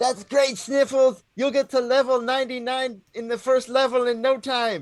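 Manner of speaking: very high shouted call. Calling down from the crow's nest to Sniffles in character: yelling from the crow's nest. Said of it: "look down from the crow's nest and yell".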